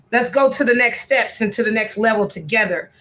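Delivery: ordinary talk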